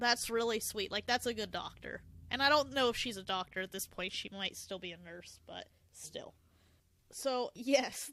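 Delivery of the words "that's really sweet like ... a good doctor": ordinary talk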